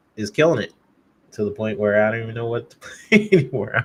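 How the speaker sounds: speaking while laughing through the words. Talking about Xbox games while reading the chat, laughing while talking. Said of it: "I'm laughing at this".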